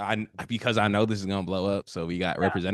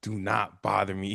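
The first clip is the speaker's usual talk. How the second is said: mock yelling, much slower; 11 semitones higher, 7 dB louder than usual. Retelling a TikTok of a guy on the phone to his fake wife, imitating a guy yelling. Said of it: "He's like yelling at like his fake wife".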